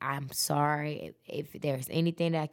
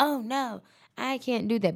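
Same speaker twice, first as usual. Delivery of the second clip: put-on hard New York accent, much higher; 5 semitones higher, 7 dB louder than usual. Retelling a hotel worker's reply to her request, in a hard New York accent. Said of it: "in her little hard New York accent".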